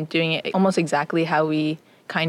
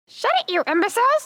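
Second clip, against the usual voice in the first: very high pitched parrot character voice. A young playwright performs a line from their play as Jolly the Parrot. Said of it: "That's an imitation of Jolly the Parrot".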